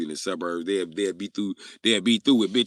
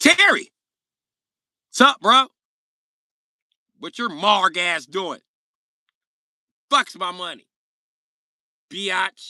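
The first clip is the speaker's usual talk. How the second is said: put-on very high, furious, angry raised voice; 11 semitones higher, 7 dB louder than usual. Imitating Jacob demanding money he is owed: imitating Jacob angry. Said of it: "That's Jacob gonna be like".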